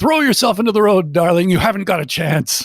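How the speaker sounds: acted-out high yell. Retelling a character shouting at someone by the road: imitating someone yelling out a window. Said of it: "he yells out the window".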